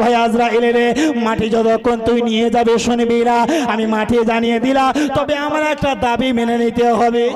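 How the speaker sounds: usual speaking voice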